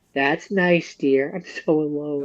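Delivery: mock forlorn, mournful, sad, lonely mother voice. Acting out a lonely, sad mom answering her daughter: imitating a sad lonely mom. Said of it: "the mom being like".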